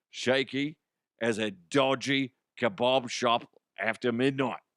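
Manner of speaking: rough, put-on attempt at a Cockney accent. Commenting on a hockey game in a put-on Cockney accent. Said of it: "It's supposed to be Cockney".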